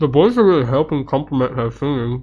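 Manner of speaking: speaking while chewing, mouth full of food. Commenting on a video while eating, talking with mouth full. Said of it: "I shouldn't talk with a mouth full".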